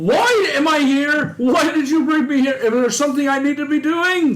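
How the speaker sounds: high pitch, every line shouted. Asked where their character is, a player answers in character, shouting. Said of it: "I'm just shouting".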